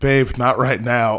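slow, sleepy, half-asleep put-on mumble. Retelling a story about a man woken in bed: imitating a half-asleep mumble. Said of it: "half asleep".

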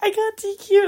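very high, very loud sobbing wail. Retelling answering a teammate after being disqualified at a swim meet, reenacting bawling. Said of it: "I'm like bawling my eyes out".

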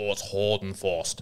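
low, slow put-on South African commentator voice. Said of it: "really Tony Gregg".

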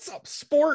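put-on high, chummy buddy coach voice. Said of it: "like your coach from Little League".

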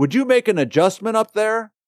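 exasperated, angry, disappointed, very high-pitched. Speaker imitating a coach or parent at the ballpark: mock-exasperated, frustrated tone. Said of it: "very exasperated, very frustrated, very angry, obviously disappointed tone of voice".

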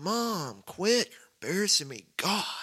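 put-on high, swooping, aggrieved kid voice with pleading tone. Acting out an embarrassed son at school lunch, Napoleon Dynamite voice. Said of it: "like a Napoleon Dynamite".

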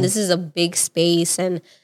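usual speaking voice

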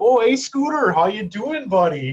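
Upper Peninsula Michigan accent. Comparing regional accents, showing the Yooper version: Yooper accent. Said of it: "a Uper accent is like".

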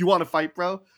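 put-on macho tough-guy voice. Acting out a guy trying to start a fight, mock-macho challenge. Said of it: "act all macho and get up and be like".

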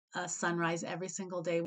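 normal talking voice

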